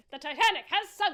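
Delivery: put-on loud, booming, slow old-time newsreel announcer voice. Joking like an old-timey news reporter: old-timey news reporter voice. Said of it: "like, old-timey news reporters talk".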